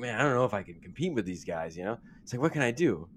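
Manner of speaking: anxious, unsure, self-doubting musing. Imitating coach Clifford waiting for his interview: imitating nervous Clifford. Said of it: "He's getting nervous".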